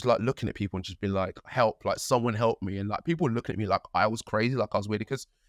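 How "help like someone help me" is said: normal talking voice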